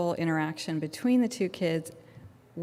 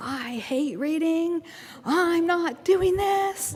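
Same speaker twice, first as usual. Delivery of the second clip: put-on very high child's scream; 11 semitones higher, 4 dB louder than usual. Recounting hearing a child arrive in the building: imitating a little kid screaming. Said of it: "I hear a little voice screaming".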